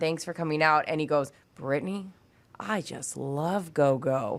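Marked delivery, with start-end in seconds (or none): 1.6-4.4 put-on warm, buttery voice, much slower. Retelling what he said to you right before he left, use Don Shelby's warm, buttery voice. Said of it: "with his warm, buttery voice".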